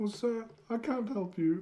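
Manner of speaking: poor put-on British butler accent, soft and quiet. In a comedy bit, answering a call for help as Alfred, bad Alfred accent. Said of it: "That's not a good accent".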